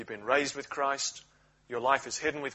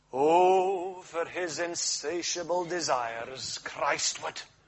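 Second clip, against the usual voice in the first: put-on Scottish preacher's accent, drawn-out "oh"; 3 semitones higher than usual. Quoting the words of an old scottish preacher, in a scottish accent. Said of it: "we'll forget the Scottish accent".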